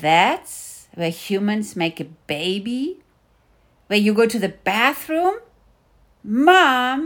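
rising, swooping, grossed-out disgusted outburst. Mulan questions her mother; rising voice. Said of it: "Her voice was rising".

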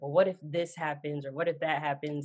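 usual speaking voice

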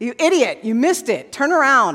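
held-in anger with a mild angry edge. Contrasting a calm GPS with one that would yell at the driver, mock yelling. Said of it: "It doesn't yell at you".

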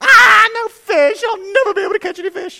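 put-on shrill, very loud, despairing childish meltdown voice. Retelling reeling in no fish on his first cast, mock child's meltdown. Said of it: "I had a complete and total meltdown".

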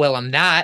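macho, manly, combative, aggressive tone. Retelling a reply to a heckler on stage: imitating a manly, aggressive tone. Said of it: "in a very, like, manly and aggressive tone".

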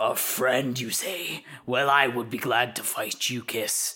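words growled out like a wolf. Narrator voices a wolf replying to a would-be friend; growling wolf voice. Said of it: "So the wolf growls and says".

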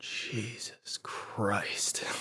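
muttered under breath. Retelling her mom's reaction while seeing it together, muttered under her breath. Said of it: "like under her breath".

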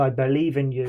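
usual speaking voice

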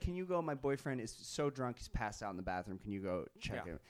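ordinary talk, nothing marked

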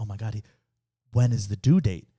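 whisper, slowed down. Retelling what she whispered to the speaker after the professor spoke, imitating a whisper. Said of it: "she whispered to me".

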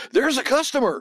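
high-pitched hollering. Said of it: "hollering to the customers".

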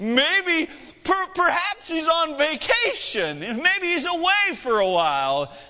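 sarcastic, giggling, high, slow mocking taunt. Acting out Elijah giggling while taunting the prophets: imitating Elijah giggling. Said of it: "he's over kinda giggling".

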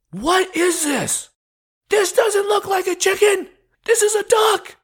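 very high, furious, angry yelling. Retelling how they looked at your dish and screamed at you: retelling angry screaming. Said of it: "they were like screaming at us".

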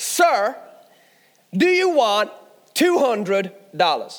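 clumsy, bad put-on American accent. Leaving a mall, retelling a voice calling out to him, bad American accent. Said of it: "forgive my American accent".

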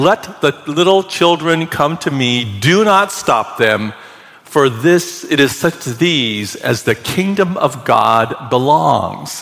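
usual speaking voice

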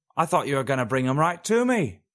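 whispering. An old crone emerges from a bush after the orcs fall: whispered. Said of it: "she whispered".

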